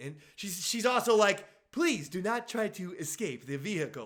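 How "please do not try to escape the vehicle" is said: put-on polite theme-park announcer voice. Retelling what the lady in the vehicle said: imitating a polite Disney World voice. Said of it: "polite Disney World voice".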